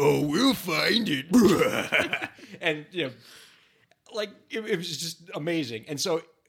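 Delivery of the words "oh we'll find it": loud put-on monster voice. Retelling guests who did a whole interview in monster voice: monster voice. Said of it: "they did the entire thing in their monster voice".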